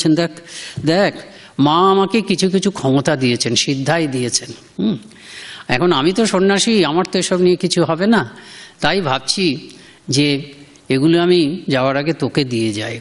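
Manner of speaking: ordinary talk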